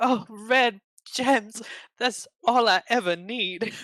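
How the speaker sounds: put-on Southern belle drawl, loud, very high, slow, drawn out. Voicing Ada answering a question about red gems: Ada as a Southern belle. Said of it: "It's Ada suddenly a Southern belle".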